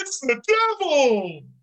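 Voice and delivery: very high, shrill, nineties-style yell. Retelling how the announcer yells the line on the show: Tony Schiavone yelling. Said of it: "yell, "It's the devil"? In his nineteen nineties It's Sting voice".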